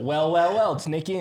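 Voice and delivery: smug, mocking put-on voice. Walking another speaker through how the exchange goes: imitating a friend's smug greeting. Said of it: "he goes".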